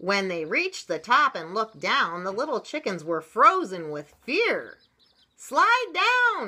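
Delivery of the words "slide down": shrill, very high-pitched frog-like shout. Narrator reads one of the frogs calling to the frozen little chickens, shouting. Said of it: "shouted one of the frogs".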